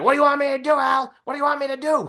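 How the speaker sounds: helpless, high, put-on whine.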